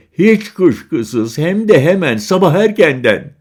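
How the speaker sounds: taunting, scornful. A young woman answers a man offering his phone number, mocking. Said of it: "Kız alay etti".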